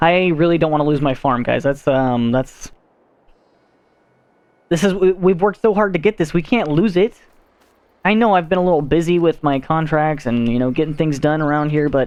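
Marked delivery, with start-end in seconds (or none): 0.0-7.1 panic spilling into stumbling words. Speaker tells listeners they don't want to lose their farm, panicked voice. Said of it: "can you hear the panic in my voice now?".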